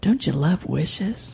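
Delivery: slow, hushed half-whisper, close and intimate. Retelling someone half-whispering a question in their ear: imitating a half-whisper. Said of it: "whispers in my ear".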